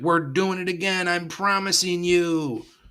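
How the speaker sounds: high-pitched cartoon frog puppet voice. Retelling what he said at the parade, in Kermit the Frog voice. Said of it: "Why you had to do the voice, man? / Kermit the Frog voice".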